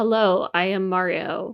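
flat, level, very slow plain reading. Mocking how the actor sounded reading the mario lines: imitating a flat mario read. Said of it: "it just sounds like he came in".

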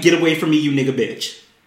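mock witch-like demonic voice. Retelling what a woman said to someone, imitating a demonic evil voice. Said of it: "that's the way she said it".

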